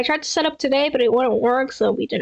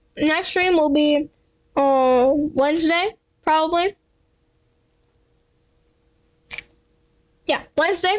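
eating mid-sentence while talking. Streamer announcing the next stream to chat, talking while eating. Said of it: "Sorry, I'm eating".

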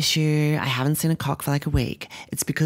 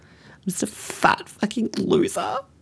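put-on sobbing, high and drawn out; 7 semitones higher than usual. Complaining about a bad week stuck in bed, fake crying. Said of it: "That was a fake cry".

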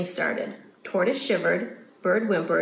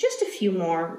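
plain

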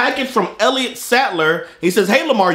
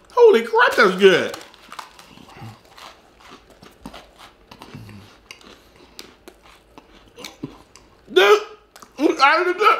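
mid-chew speech, mouth crammed full of food; 3 semitones higher than usual. Taste-testing a cookie on camera, talking with mouth full. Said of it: "I can't talk".

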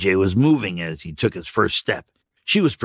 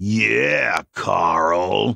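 taunting mocking drawl, name stretched out. A woman mocks a man by repeating his name, in a mocking drawl. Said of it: "Janet drawled out his name mockingly".

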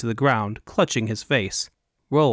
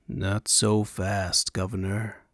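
icy, cold, hushed voice, drawled very slowly; 4 semitones lower, 6 dB quieter than usual. A newcomer behind the militia interrupts the governor, in a cold drawl. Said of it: "A cold voice drawled out".

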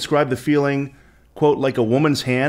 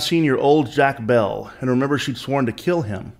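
plain

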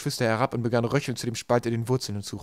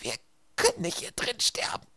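faint, barely audible whisper; 10 semitones higher, 5 dB quieter than usual. Stuck with her siblings while her little sister doubles over in pain, very quietly. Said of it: "sagte Violet so leise".

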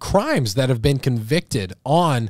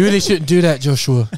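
loud, raised put-on British accent; 2 semitones higher, 5 dB louder than usual. Joking that the Holy Spirit speaks, in a British accent. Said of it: "The Holy Spirit talks to you in a British accent".

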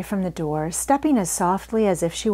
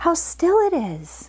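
stage whisper, pitched high and drawn out; 10 semitones higher than usual. Seeing a place unlike any other in her life, she half-whispers. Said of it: "she whispered".

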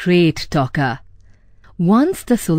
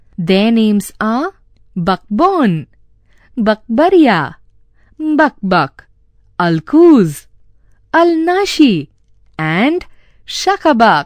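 ordinary delivery, nothing marked

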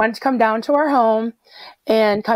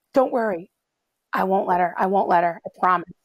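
mock horrified reassuring tone, faster; 2 semitones lower, 4 dB quieter than usual. Retelling how a man answered the screaming speaker, acting out horrified reassurance. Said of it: "he was horrified".

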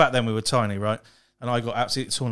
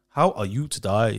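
imitated Chinese-accented English. Asked by the others to speak that way, the speaker tries a put-on Chinglish accent. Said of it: "I'm normally quite good at that accent".

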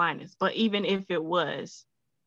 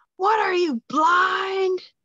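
mock scream, higher and louder; 13 semitones higher, 6 dB louder than usual. Retelling a classmate screaming at the speaker in gym class: imitating a classmate screaming. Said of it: "he screams at me".

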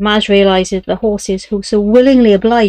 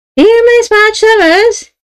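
very high, piercing, thin reedy voice; 13 semitones higher, 5 dB louder than usual. A narrator reads a stranger's demand to Madge as she walks toward the exit: thin, reedy voice. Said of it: "a thin, reedy voice".

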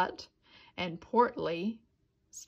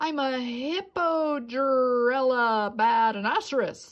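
loud, proud, declaring voice; 4 semitones higher, 5 dB louder than usual. Narrator reads a son answering his mother's question, proudly. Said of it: "Portly said proudly".

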